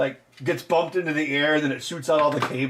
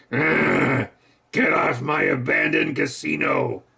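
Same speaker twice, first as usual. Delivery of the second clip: very slow, rough, dragged-out drawl. Joking about another film where Harrison Ford shows up: Harrison Ford impression. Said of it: "And then Harrison Ford shows up".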